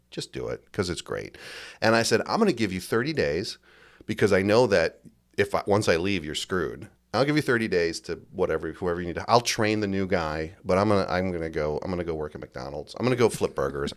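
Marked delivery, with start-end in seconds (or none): none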